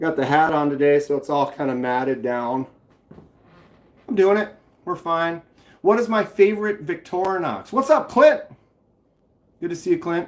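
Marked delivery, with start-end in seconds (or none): 7.7-8.4 quick, half-yelled, called-out voice. Speaker greeting someone by name, shouting. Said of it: "Sorry I'm yelling".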